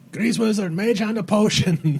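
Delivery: loud, high-pitched yell.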